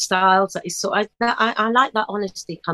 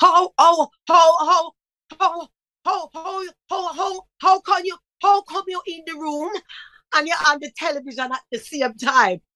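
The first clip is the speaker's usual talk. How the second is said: put-on old Jamaican man voice, stuttering, higher pitch; 9 semitones higher than usual. Imitating a stuttering father puzzled at the television: old Jamaican man way, stuttering. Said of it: "in that old Jamaican man way".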